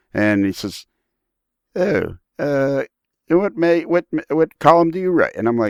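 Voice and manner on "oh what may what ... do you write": put-on English accent, higher pitch. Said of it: "answers with an English accent".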